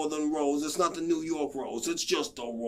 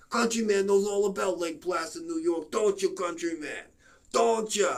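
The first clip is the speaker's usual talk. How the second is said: put-on New York accent; 4 semitones higher than usual. Sharing Lake Placid facts, the speaker addresses the countryman in a New York accent impression. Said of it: "Doing my New York impression".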